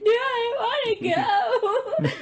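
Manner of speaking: mock very high, very slow, drawn-out sobbing wail. Retelling an older sister who began crying while a mother answered: imitating someone crying. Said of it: "my sister would start crying".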